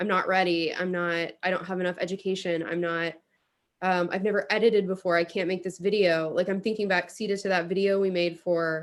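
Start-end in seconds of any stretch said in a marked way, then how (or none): none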